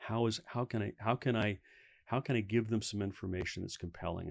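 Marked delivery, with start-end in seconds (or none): none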